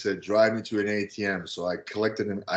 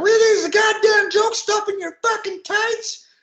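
mock shrill, high, furious, angry yelling; 5 dB louder than usual. Retelling how a man stormed into the dressing room and yelled at someone: retelling someone yelling. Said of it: "he starts yelling at Sean".

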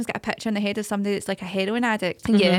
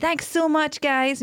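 fake Scottish accent blended half with American; 6 semitones higher than usual. Retelling someone thanking fans after a concert: fake Scottish, slightly American accent. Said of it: "kind of fake Scottish, slightly American accent".

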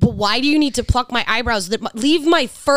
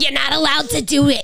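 put-on woman's voice, higher pitch; 3 semitones higher than usual. Retelling what a woman told her about how she dresses, imitating how she sounded. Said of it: "That's literally how she sounded".

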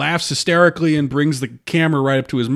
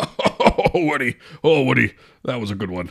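slow, forced, put-on fake laughing delivery; 3 semitones lower than usual. Imitating a fake laugh while comparing someone's laugh: Alec Baldwin fake laugh. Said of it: "the Alec Baldwin fake laugh".

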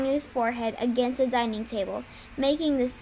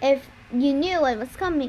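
ordinary delivery

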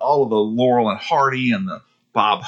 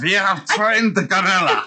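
mock German villain voice, higher; 7 semitones higher than usual. Playing the Nazis from the episode being discussed: put-on evil Nazi voice. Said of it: "The Nazis?".

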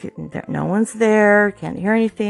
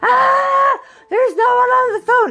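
very high shriek with a long drawn-out ah; 4 dB louder than usual. Retelling a sister answering a phone with no one there: imitating a scream. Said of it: "and she screams".

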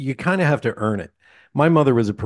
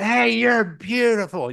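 mock shrill, very high, drunken scream; 12 semitones higher than usual. Recalling a drunk man walking up to a woman, retelling a drunk man's scream. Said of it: "he's screaming at the top of his lungs".

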